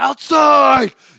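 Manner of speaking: very high, full-throated, loud yelled call. Telling the setter where to set it, yelled 'outside'. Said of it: "you don't have to yell it like me. I'm I'm using my man voice".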